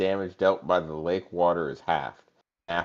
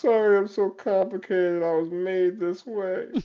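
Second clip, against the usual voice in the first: very high, blubbering, sobbing whine; 13 semitones higher than usual. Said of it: "And it starts crying".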